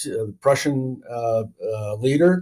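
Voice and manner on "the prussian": ordinary talk, nothing marked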